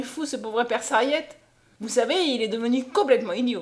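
ordinary talk

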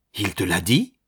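tremulous, quivering voice. A woman questions the other speaker, trembling. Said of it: "frémissante".

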